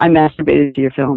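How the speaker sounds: low, flat, expressionless, dead-straight deadpan. Retelling what a fan said in line: imitating a deadpan delivery. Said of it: "really, like, deadpan, he goes".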